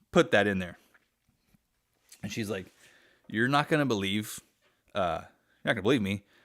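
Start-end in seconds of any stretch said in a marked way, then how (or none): none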